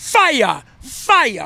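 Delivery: hyped, pumped-up, swooping excited exclamation. Rallying a crowd before the election, pumped up and excited. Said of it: "I am so pumped up right now".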